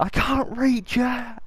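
put-on, very high-pitched, long, drawn-out shriek. Retelling what someone screamed in a tense moment: retelling a scream. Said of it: "was literally screaming".

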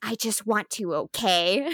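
put-on whisper. Retelling a fan art panel where the dark elf speaks to Thor: imitating a whisper. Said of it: "gets up close to Thor and whispers".

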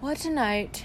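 half-formed, mumbled words. Groping for the teapot as everyone sits down around him, a man mumbles. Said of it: "he mumbled".

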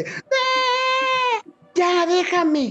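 play-acted piercing, very high shriek, long "eee". Telling a story about a girl who started screaming, imitating a girl screaming. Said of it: "la niña empieza a gritar".

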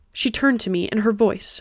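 plain

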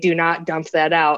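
quiet, hushed delivery. Retelling what was said in the lab: imitating a quiet warning. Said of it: "I hear her quietly say".

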